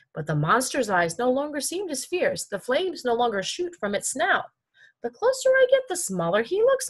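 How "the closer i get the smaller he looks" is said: perplexed, wondering tone in a very high voice. Narrator reads Myobi's line as he climbs toward the monster, puzzled.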